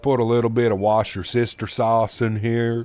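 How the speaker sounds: crazy, over-the-top put-on Southern accent. Imitating the guy from those cooking videos as he adds a sauce, in a crazy southern accent. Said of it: "in like a crazy southern accent".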